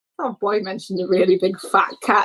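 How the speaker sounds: usual speaking voice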